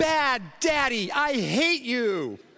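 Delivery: mock, very slow, high, stretched-out child's yell. Retelling what a son shouted: imitating a child yelling. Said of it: "And then he yelled".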